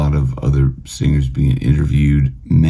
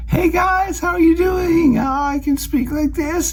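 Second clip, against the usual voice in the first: higher, bright, forward-placed, lively and animated voice. Demonstrating a greeting to guys: higher, frontal-placement, animated voice. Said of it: "a higher resonance of frontal placement ... it sounds more animated".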